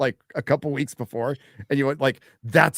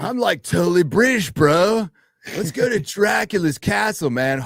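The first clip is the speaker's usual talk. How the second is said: put-on laid-back surfer voice, higher pitched; 5 semitones higher, 4 dB louder than usual. Mocking an actor's accent from a vampire film: Keanu Reeves in Dracula voice. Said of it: "Keanu Reeves doing a legendary accent".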